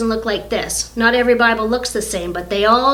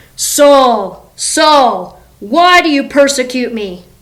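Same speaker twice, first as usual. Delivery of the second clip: grand, booming, slow heavenly voice; 2 semitones higher, 6 dB louder than usual. Telling the story of Saul to listeners, voicing the heavenly speaker in best God voice. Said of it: "this is my best God voice".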